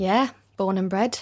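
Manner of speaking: accent from northern England. Answering whether they still live where they were born, northern english accent. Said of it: "Now I'm doing a northern accent".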